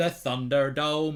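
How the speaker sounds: plummy upper-class accent. Speaker tries out a posh voice while repeating a phrase, trying a posh voice. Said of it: "I'm trying to do a posh voice now".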